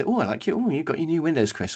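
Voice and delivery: put-on sweet, fake-nice friendly voice. Imitating a neighbour commenting on new windows: imitating fake niceness. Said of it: "pretending to be sort of nice".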